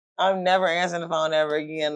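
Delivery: plain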